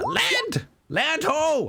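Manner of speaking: very high, swooping, yelled call. Voicing the captain calling out that land is sighted: captain yelling out. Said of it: "kind of yells out".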